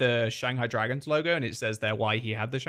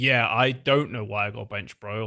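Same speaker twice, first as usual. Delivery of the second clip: mock sarcastic delivery; 3 semitones lower, 3 dB louder than usual. Imagining how a benched player complained: imitating a sarcastic tone.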